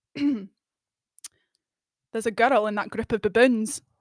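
put-on Scottish accent. Asked to do it now, the speaker apologizes to Scots and tries a Scottish accent. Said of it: "whenever I think of doing a Scottish accent".

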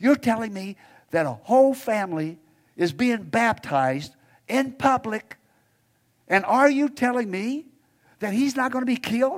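big loud whisper. Retelling a young woman's reply during a church service: imitating a big loud whisper. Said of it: "she said in this big, loud whisper".

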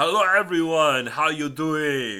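very loud, slow, booming put-on Austrian accent. Greeting everyone on the show, Schwarzenegger impression with Austrian accent. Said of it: "That's my Schwarzenegger impression for the day".

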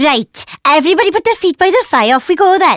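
put-on elderly Welsh woman's voice and way of talking. Asked for a taste of her nana's Christmas words, imitating her Welsh nana. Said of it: "Give me a little hit of her".

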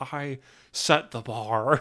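very slow, stretched-out words. Quoting what Nick Cage said in an interview: Nick Cage impression. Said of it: "that's a really good impression".

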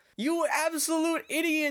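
very high, loud scream. Retelling how the kid screams at a painter on the tracks: imitating someone screaming. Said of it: "And he screams at him".

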